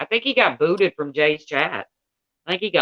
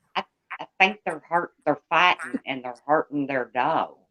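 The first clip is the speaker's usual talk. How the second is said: fast, hurried, fake Southern accent; 3 dB quieter than usual. Reenacting the same tape, claiming to do it better, in a fake Southern accent. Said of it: "I'm better at it than he is".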